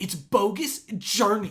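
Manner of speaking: mad, loud, slow and high-pitched.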